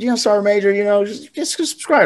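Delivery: very high, squeaky, humble put-on voice. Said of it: "She's like".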